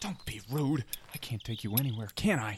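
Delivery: hushed whisper. Hiding from a knight and scolding a brother: whispering. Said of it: "I can hear you whispering".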